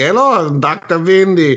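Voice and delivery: German accent impression. Describing a villain's voice to the others, in a put-on German voice. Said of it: "He's had more of a German voice".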